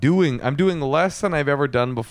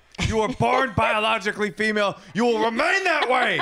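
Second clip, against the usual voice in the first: high-pitched mock scream. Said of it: "I grabbed her and I screamed".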